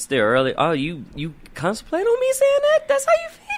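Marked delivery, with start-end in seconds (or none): 1.1-3.6 very high, swooping, squeaky voice. A host on Dragon Sports Live answers being told it's still early, in a high squeaky voice. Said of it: "Got me talking in my high squeaky voice now".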